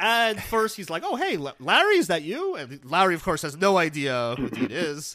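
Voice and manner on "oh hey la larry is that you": loud, high-pitched voice. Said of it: "neighbor [name] returns to the show".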